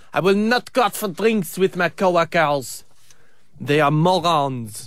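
English in a put-on French accent. Voicing the man from a news story about his employer, in a French accent. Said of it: "surprising myself with this French accent".

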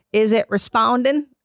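ordinary talk

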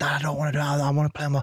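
re-enacted, acted-out shout. Re-enacting a child refusing to Dad: retelling a shout. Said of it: "I started shouting".

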